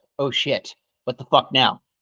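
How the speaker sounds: usual speaking voice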